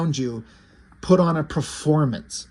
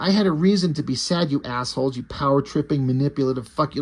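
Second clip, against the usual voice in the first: ordinary talk, nothing marked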